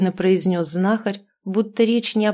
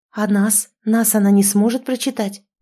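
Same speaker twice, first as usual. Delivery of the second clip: usual speaking voice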